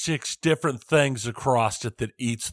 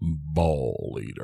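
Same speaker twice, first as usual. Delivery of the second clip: deep gravelly voice, much lower; 9 semitones lower, 4 dB quieter than usual. Picking the right voice to start the game, speaker demos a deep gravelly Ving Rhames voice. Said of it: "deep, gravelly voice just going".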